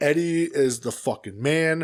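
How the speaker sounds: ordinary delivery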